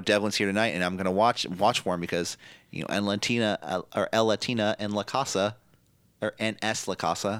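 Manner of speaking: ordinary talk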